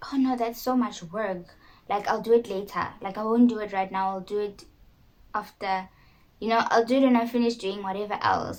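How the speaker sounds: ordinary talk, nothing marked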